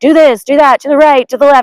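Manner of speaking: high, yelled mock shouting, one after another. Retelling a first canoe trip with dad in the back, imitating him yelling. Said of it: "he's like yelling at me".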